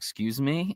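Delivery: ordinary talk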